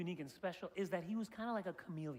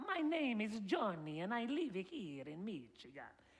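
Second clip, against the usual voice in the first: exaggerated Italian accent, every word slow and stretched. Explaining how to pretend to speak Italian, giving an example: Super Mario Bros. Italian accent. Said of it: "they always extend the words like".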